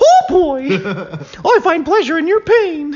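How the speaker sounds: very high, swinging pitch. Doing weird voices into a microphone, in a Mickey Mouse voice. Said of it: "Or Mickey Mouse".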